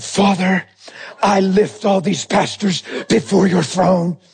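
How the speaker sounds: serious, earnest, solemn prayerful voice. Retelling standing up to pray aloud, in an intercession prayer voice. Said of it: "I put on my intercession voice too".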